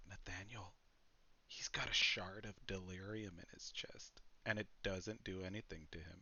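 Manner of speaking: voice brought way down. Playing a character who points at his chest, in a lowered voice. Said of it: "he kind of lowers his voice".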